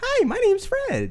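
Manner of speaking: very high, slow, and loud voice. Answering how Fred spoke by imitating him: Fred voice. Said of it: "just like that".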